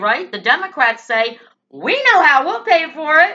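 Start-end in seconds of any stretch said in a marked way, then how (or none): 1.7-3.4 high, loud mocking rant.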